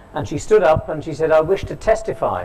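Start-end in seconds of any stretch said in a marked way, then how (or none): 1.4-2.5 delivered in a put-on American accent. Recounting a lecture where a woman stood up, voicing her in an American accent. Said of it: "in an American accent".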